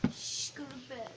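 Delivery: very soft whispering. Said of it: "so I whisper talked".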